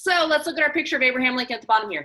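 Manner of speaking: rushed, fast, loud rattled-off delivery. Presenting, the speaker moves on to the next picture, said really fast. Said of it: "I said that really fast".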